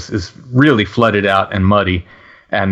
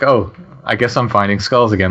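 ordinary talk, nothing marked

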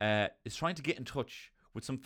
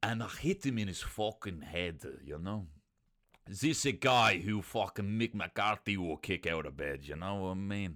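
mixed accent of French and Dublin Irish; 2 semitones lower than usual. Speaker showing the accents they would try on dublin residents, dublin french man accent. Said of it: "the one that was least problematic was the Dublin French man".

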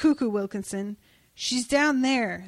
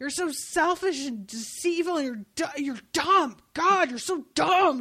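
put-on angry ranting voice, higher; 4 semitones higher than usual. Retelling Foxglove's rant at Hazel: imitating Foxglove pissed off. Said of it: "is just so pissed off".

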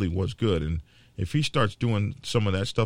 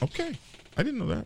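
very high, soft, excited little squeaky voice; 5 dB quieter than usual. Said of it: "that was a high pitch".

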